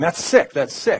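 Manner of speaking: acted, high-pitched yell. Retelling how a guard reacted on hearing the speaker: imitating someone yelling. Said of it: "he starts yelling at me".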